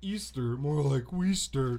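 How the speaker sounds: dim-witted, dopey cartoon starfish sidekick voice. Joking with others about holiday songs, the speaker does a Patrick impression. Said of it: "That's my best Patrick impression".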